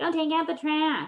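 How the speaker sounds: terrible high, whiny, biting mock voice. Explaining how kids echo a mom's order back: mocking whiny, biting tone. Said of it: "You do that terrible, like whiny, biting tone".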